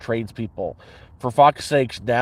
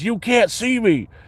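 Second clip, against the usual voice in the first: play-acted very high, all-out shriek; 10 semitones higher than usual. Describing an orc character who thinks he is stealthy: imitating a character screaming. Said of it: "screams at the top of the lungs".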